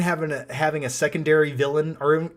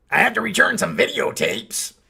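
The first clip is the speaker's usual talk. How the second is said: rough, creaky, raspy voice pitched up; 5 semitones higher than usual. Answering a viewer's request, quoting a film line as a Nick Nolte impression. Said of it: "while doing a Nick Nolte impression".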